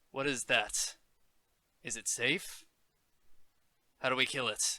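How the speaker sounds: very serious, grave, in-character delivery. Voicing their character who is foreign to the land, asking the party, very serious. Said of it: "I just get very serious with my character's um".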